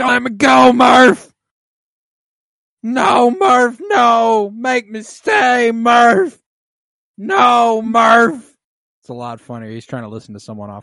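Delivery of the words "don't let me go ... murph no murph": fake shouting, higher and louder. Acting out a film scene for a laugh: mock yelling. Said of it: "and I'm yelling".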